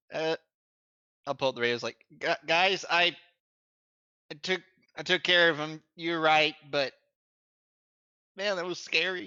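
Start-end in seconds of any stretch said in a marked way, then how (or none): 2.2-9.2 jittery, nervous, pitched-up stumbling stammer. Player voices a character radioing the group, told to sound nervous, nervous voice. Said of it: "make sure you sound nervous".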